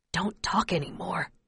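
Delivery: hushed whisper under the breath. After days of walking, a father tells his child to stop talking, whispering. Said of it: "he whispers".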